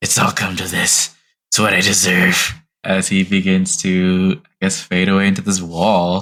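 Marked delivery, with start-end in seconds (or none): 0.0-2.5 mumbled, muttered speech. Voicing a character fading into a wall in pain: mumbling to himself. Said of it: "mumbles to himself and shakes his head".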